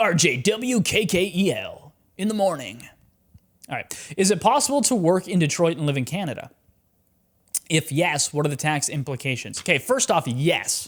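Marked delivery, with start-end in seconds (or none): 0.0-2.9 very slow, drawn-out radio announcer voice. Speaker repeats letters as if a radio call sign: radio station announcer voice. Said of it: "sounds like a radio station".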